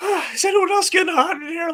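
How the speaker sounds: very high, loud, nervous voice. Describing a character as a terrible poker player: nervous Ron Stoppable voice. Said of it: "He does this thing where".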